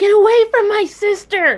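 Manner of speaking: sudden acted outburst, yelling. Playing a character who sees a shadowy form by her sister: yelling in character. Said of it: "she's gonna yell".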